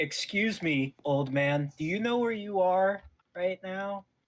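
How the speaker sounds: very condescending, patronising, superior tone. Walking up to an old man who popped up from nowhere, very condescending. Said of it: "Say very condescendingly to him".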